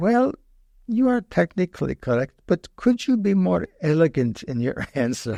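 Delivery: put-on heavily laid-on Italian accent. Recalling answering a hard question in class, quoting the teacher: imitating Bucciolati's Italian accent. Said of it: "in his Italian accent".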